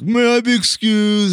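put-on high, loud, whiny spoiled bratty teen voice.

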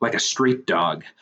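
ordinary delivery

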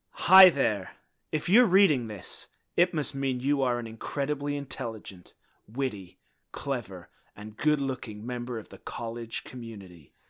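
badly done, put-on American accent. Reading a written message aloud to the others, american accent. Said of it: "I'm going to do it in my American Nexium accent".

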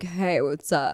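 fake deep would-be sexy voice

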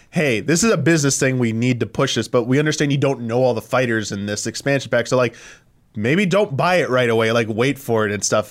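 ordinary delivery

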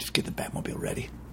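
barely audible, low-register whispered hero voice. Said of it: "Just speak up a little".

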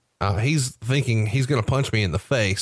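normal talking voice

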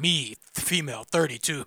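put-on caveman voice. Mocking how another speaker read out a message, reading like a caveman. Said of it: "why are you reading it like a caveman?".

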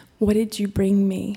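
imitated very soft voice. Retelling what she said when she heard the speaker come in: imitating a very soft voice. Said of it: "she said in this very soft voice".

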